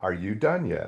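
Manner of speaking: hushed, soft, quiet voice. Retelling a rant while waiting to be struck dead, imitating a quiet reply. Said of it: "the Lord quietly said".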